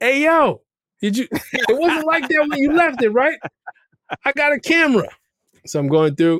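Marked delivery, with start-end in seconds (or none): 0.0-3.4 mock shouting, much higher in pitch. Checking the doorbell camera after the car was hit, retelling a yell. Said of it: "and I'm yelling".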